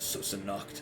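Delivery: hushed whisper under the breath. Voicing a character who watches a player pick up a bone: whispering under his breath. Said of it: "he'll whisper under his breath".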